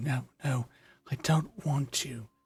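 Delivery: high, anguished, sobbing cry of pain. Voicing a dying character writhing in pain: crying in pain. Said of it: "is just crying, writhing in pain".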